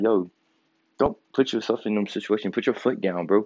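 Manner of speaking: ordinary talk, nothing marked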